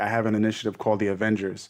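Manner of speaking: ordinary delivery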